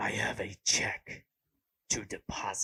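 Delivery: overplayed, loud, breathy put-on stage whisper. Imagining using this voice for everyday errands at the bank, the speaker tries a put-on voice. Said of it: "that was the voice that I used".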